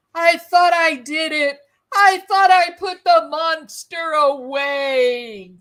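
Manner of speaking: sobbing, crying through words, drawn out. Retelling what he said after slapping her, imitating someone sobbing. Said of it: "And he's sobbing".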